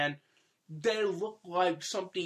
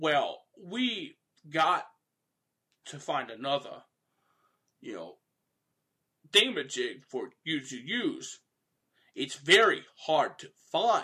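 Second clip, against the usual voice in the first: slow, halting, swooping delivery full of pauses; 2 semitones lower, 3 dB louder than usual. Speaker imitates a movie character's speech pattern they found hilarious, Ghoul's pausing speech pattern. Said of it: "That sort of pausing".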